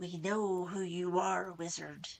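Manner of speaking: harsh, grating cat-like voice with odd inflections. A voice from the shadows speaks to the wizard: grating tortured-cat voice. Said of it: "a voice that sounded like a tortured cat might if some demented being gave it the gift of speech".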